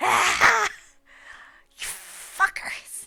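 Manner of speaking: loud, rough, anguished scream of pain. The game master voices an enemy struck right in the kidney: screaming in pain. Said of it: "He begins like screaming".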